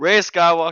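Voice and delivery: very loud, high-pitched, thrilled, excited yelling outburst. Asked for feelings on the topic, answering with excited yelling. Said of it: "I'm sorry if I'm yelling".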